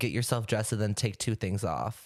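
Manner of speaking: ordinary talk, nothing marked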